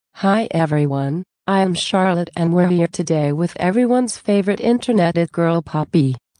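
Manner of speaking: put-on robotic mannequin voice. As Charlotte the mannequin, opening an interview with Poppy, in a robotic voice. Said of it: "a mannequin named Charlotte that has a robotic voice".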